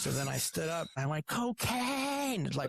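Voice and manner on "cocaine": loud put-on yell, higher pitched. Retelling standing up in a restaurant and yelling a word: retelling his own loud yell. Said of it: "I yelled as, as loud as I could".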